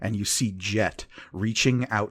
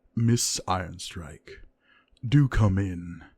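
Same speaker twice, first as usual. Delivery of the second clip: even, silky, smooth voice. As the door opens, a voice invites miss ironstryke in, in a smooth voice. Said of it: "and a smooth voice says".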